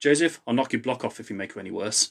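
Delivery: plain reading voice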